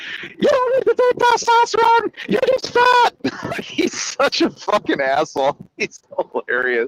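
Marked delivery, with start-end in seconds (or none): 0.2-3.6 squeaky, very high-pitched voice. Telling others how funny the rage bait king is, in a high squeaky Greg Doucette voice. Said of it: "He's got this high squeaky voice".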